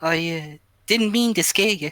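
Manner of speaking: put-on high-pitched Australian accent. Voicing a character in a scene, in an Australian accent. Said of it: "That's a good, pretty good Aussie".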